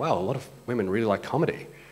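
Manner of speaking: ordinary talk, nothing marked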